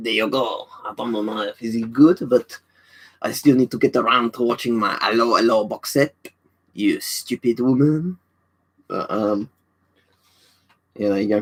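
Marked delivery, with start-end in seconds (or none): 0.0-8.2 French-accented voice. Asked by Brandon to do a French accent, the speaker answers in one. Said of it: "could you do a French accent?".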